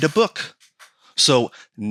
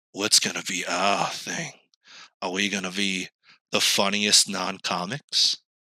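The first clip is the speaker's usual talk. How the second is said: slow, sinister, villainous scheming tone; 5 semitones lower, 6 dB quieter than usual. Joking about picking a gimmick, posing with lit face: mock sinister scheming tone. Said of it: "sinister as possible".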